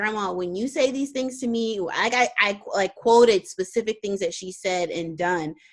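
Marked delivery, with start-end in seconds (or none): none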